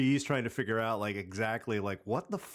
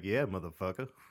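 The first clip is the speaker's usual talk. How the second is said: ordinary delivery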